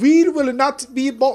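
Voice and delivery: terrible, high-pitched bad French accent. Imagining an E3 press conference after a takeover attempt: Ubisoft in a bad French accent. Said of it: "My French accent is terrible".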